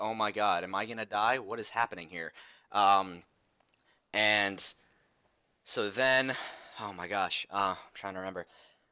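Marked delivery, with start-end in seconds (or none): 0.0-2.3 put-on panicked voice. Retelling seeing a shadow by an elevator: imitating own panic. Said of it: "I'm, like, panicking".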